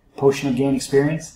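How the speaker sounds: normal talking voice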